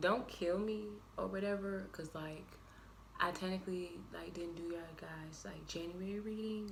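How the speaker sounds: very quiet, sheepish, ashamed whisper. Addressing Aquarius viewers after skipping their January reading, whispering. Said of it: "I'm whispering because I'm ashamed of myself".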